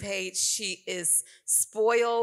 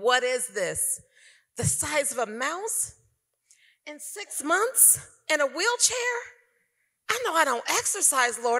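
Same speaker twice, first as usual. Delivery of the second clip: put-on crying, sobbing, desperate, swooping pitch; 6 semitones higher than usual. Recounting crying out to God, the speaker reenacts the moment, retelling a sobbing plea. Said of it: "I'm crying and sobbing and saying".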